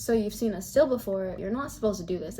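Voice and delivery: ordinary delivery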